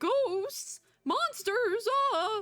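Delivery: very high, horrible, badly acted terrified put-on voice. Imitating a game character who is now terrified: bad terrified Andy voice. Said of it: "That was a horrible voice".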